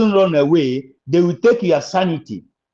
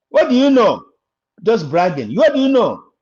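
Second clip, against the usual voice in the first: forceful, raised voice, speaking up; 4 semitones higher than usual. Speaking to listeners about Biafra, the speaker talks in a raised voice. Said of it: "I'm sorry if I'm raising my voice".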